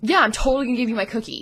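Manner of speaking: mock dry, dripping sarcasm, sarcastic and mocking. Retelling what he would say when the speaker was little, imitating a sarcastic tone. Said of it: "he would say something sarcastically like".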